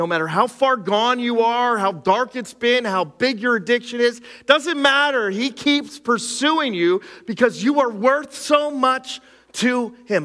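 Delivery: high, mounting, excited preaching tone.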